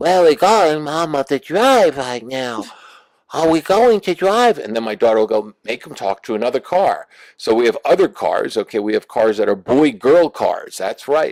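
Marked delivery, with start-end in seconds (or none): 0.0-4.6 put-on high-pitched newborn baby voice. Parent voicing the family car, a newborn according to her daughter: newborn car voice. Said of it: "my car talks like this".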